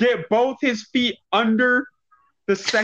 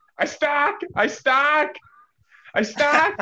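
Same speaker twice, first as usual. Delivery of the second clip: very slow, stretched-out high cry; 5 semitones higher than usual. Retelling a wrestling match where a wrestler got stuck: imitating Lockjaw yelling. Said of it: "Lockjaw yelling".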